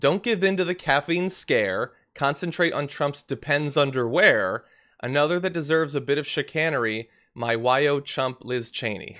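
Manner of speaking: ordinary delivery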